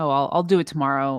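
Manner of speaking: ordinary delivery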